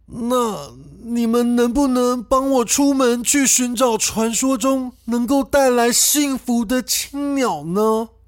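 put-on pleading old woman's voice. Narrating a story, an old woman begs the siblings for help: anxious pleading old woman. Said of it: "有一个驼背的老婆婆来到了[name]兄妹家。".

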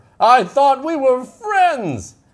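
high, slow, pitiful pleading voice.

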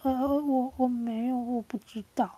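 put-on stammering, hesitant hemming and hawing. Describing a timid person afraid of being scolded, imitating someone stammering. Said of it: "然后就就支支吾吾的".

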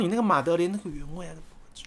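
mock barely audible voice. Retelling how a shop clerk took the order, imitating a very soft-spoken clerk. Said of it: "他讲话就是这么小声".

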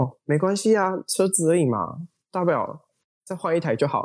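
cool, calm, domineering and commanding composure. Recalling a car mishap, speaker repeats the reply to a frightened woman: retelling own calm, bold reply. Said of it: "非常镇定、非常霸气的跟她说".

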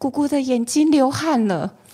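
high, startled, frightened yell. Retelling what her niece shouted to the family downstairs, imitating a frightened shout. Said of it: "她就是很惊恐的大叫".

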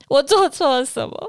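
mock tearful voice, choking on sobs, choked crying. Retelling what they said back then, imitating choked-up crying. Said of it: "用那种哽咽哭的说".

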